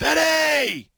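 put-on high scream.

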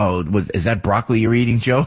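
usual speaking voice

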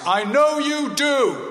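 very high-pitched loud voice. Retelling what the speaker's dad said as the speaker left the hospital ward, in a loud voice. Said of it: "in a loud voice".

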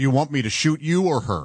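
ordinary talk

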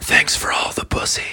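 soft, slow whisper. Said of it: "I'm gonna lean down and just whisper".

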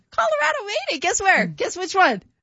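excited, high-pitched shouting.

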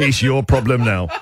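put-on voice laughing while speaking. Imitating King Carl with his feet up, smoking a cigar: imitating King Carl laughing. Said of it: "laughing, going".

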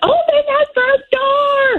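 mock very high, long-held, drawn-out shriek. Retelling screaming at the children while carrying a mouse, retelling one's own scream. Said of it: "I'm screaming at my children".

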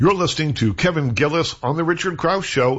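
ordinary talk

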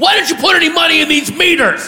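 screaming. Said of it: "he screams to me".

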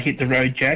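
ordinary talk, nothing marked

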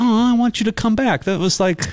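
put-on very high, squealing, gushing Boston accent, thrilled. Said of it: "everyone in Boston's like".

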